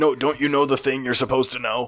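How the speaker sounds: put-on large orc man voice. Narrating a scene, the speaker voices a large orc man. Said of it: "You see a large orc man".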